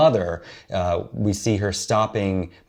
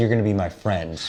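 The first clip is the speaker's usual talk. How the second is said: plain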